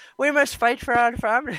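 high-pitched mock Irish accent.

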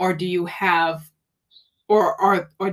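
stammering over words. Interviewer asking a guest a question, stuttering over the wording. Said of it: "I'm stuttering here".

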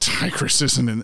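ordinary talk, nothing marked

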